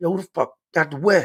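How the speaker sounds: high, aggressive, put-on hard tough-guy voice. Retelling the visitor asking again, sounding tough: imitating a tough-guy aggressive demand. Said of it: "he sounds like he's on some Big Brody shit".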